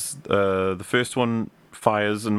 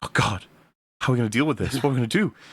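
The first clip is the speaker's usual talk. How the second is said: mock panicking, rushed, frantic, at a total loss. Retelling a show scene where Mando panics: panicking Mando voice. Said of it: "Mando's panicking".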